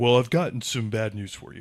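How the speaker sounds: mocking smug put-on voice. Imitating a former manager delivering bad news: imitating the smug manager. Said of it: "what was the voice?".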